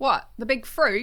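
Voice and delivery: put-on Australian accent. Playing a garage worker answering a customer, put-on australian accent. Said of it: "you immediately took on my accent".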